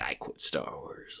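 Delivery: soft, slow smug elitist whisper.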